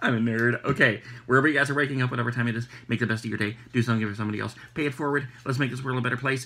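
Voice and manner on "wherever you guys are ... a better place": very fast, rushed, rattled off all in one go. Signing off to viewers at the end, very fast. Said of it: "I said that really fast".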